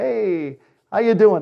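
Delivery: heavily sarcastic voice. Describing what some say when he first rides along, mimicking sarcastic greeting. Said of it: "They're kind of very sarcastic".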